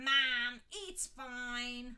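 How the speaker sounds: very loud grumbling with "fine" stretched out. A son whose mother fusses over his hair complains to her. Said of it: "they heard him complain".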